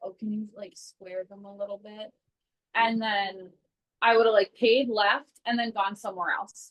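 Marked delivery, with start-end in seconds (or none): 0.0-2.1 put-on whisper, quieter. Acting out how they once would have asked a nail tech: imitating own whispered request. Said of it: "I probably would have whispered to her".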